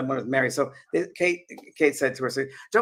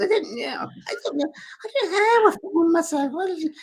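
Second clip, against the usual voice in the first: put-on female Scottish accent, pitched much higher; 13 semitones higher than usual. Retelling what a woman called Mary said, imitating Mary's Scottish accent. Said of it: "I'm trying to my Scottish accent".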